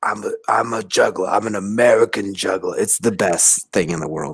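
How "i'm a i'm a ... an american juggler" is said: rough, really raspy, rasping man's voice. Quoting a man from a short documentary: imitating a really raspy voice. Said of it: "the really raspy voice man says".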